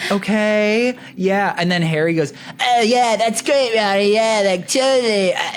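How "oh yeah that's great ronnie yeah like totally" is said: silly, high, put-on cartoon-kid voice. Retelling how Harry answered an older guy, in a put-on voice. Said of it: "He sounds like Cartman?".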